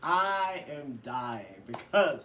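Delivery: plain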